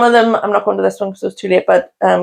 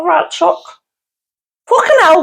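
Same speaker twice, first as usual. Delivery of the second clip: Liverpool accent, much higher, slower; 9 semitones higher than usual. Showing the other speaker the one phrase they can manage, in a liverpool accent. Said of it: "That's the only thing I can say in Liverpool accent".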